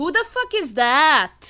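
put-on, fake New York accent. Doing an accent for others to guess, in a put-on New York accent. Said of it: "That's a New York accent. Listen to what I'm doing".

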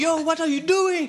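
loud, high-pitched shouting.

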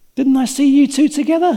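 put-on high, loud, accusing servant girl voice.

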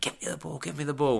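put-on frantic screaming, very high and rough. Speaker recalls a young player screaming at someone during a game, retelling a scream. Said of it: "he was screaming, like".

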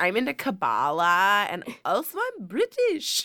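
very drawn-out, slow, sing-song pop star voice, swooping. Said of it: "That's my impression of [name]".

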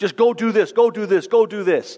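emotionless, high-pitched, barked shouting. Imitating a general in heaven shouting commands with no emotion: imitating a general shouting commands. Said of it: "shouting commands down at us like Alexander the Great with no emotion".

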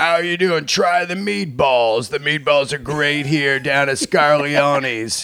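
put-on old-school trained radio announcer voice. Speaker imitating a longtime announcer met in person, in a radio announcer voice. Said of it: "what is that voice you're doing".

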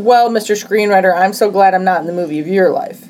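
ordinary delivery

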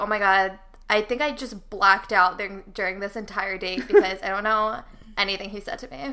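ordinary talk

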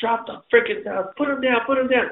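acted-out, furious, high-pitched scream. Retelling their own reaction in a story, retelling a scream. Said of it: "screaming at him to drop the salad".

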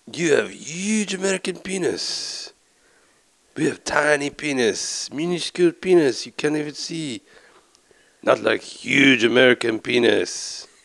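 put-on loud, slow Japanese accent. Doing the Japanese voice from a show on request: South Park Japanese accent. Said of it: "Should I do the Japanese voice from South Park?".

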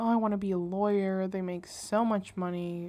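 normal talking voice

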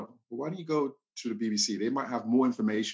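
ordinary talk

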